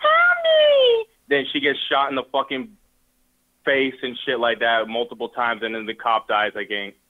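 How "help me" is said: mock shrill, very high, loud screaming cry. Retelling a movie scene where a woman runs out: imitating a woman screaming. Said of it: "the bitch comes out the curtain screaming".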